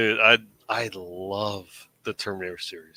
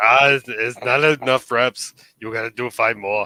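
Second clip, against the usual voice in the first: put-on loud, terrible muscleman accent, barked like a bodybuilder; 3 semitones higher, 7 dB louder than usual. Retelling weight-training jokes with friends: Arnold Schwarzenegger voice. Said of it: "Arnold Schwarzenegger's voice".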